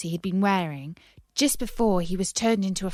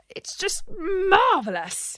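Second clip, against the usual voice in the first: very high, croaking voice; 11 semitones higher than usual. Narrator reading a character who can walk and talk again, croaky voice. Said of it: "he said in a croaky voice".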